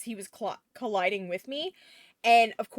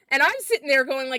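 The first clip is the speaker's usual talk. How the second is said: usual speaking voice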